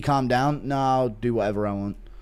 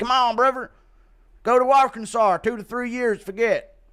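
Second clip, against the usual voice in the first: very high, pitched-up voice; 9 semitones higher, 3 dB louder than usual. As Bryce Mitchell cageside, telling a fighter what to do; Bryce Mitchell impression. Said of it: "Impression of Bryce Mitchell cage side".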